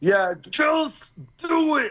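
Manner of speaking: "just do it" drawn out high and slow.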